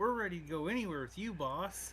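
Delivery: put-on very high, childlike children's voices in unison. The little angels answer the boss in unison, in a high-pitched children's voice. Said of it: "in a high pitched child children's voice".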